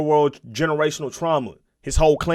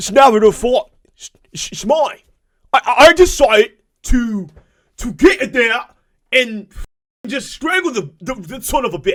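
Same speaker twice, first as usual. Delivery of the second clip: terrible fake Australian accent, loud and high; 8 semitones higher, 6 dB louder than usual. Telling about a crocodile bite, trying a terrible fake australian accent. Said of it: "that's a terrible accent".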